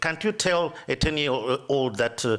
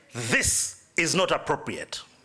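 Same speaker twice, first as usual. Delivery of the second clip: mock, firm, stern, commanding tone. Retelling a daughter objecting to a book page: imitating a commanding voice. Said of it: "she came commanding".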